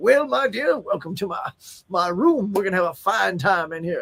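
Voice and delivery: put-on deliberate Southern accent. An actor recalls how a mustache made them deliver lines as a southern plantation owner. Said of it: "delivering all my lines as a Southern plantation owner".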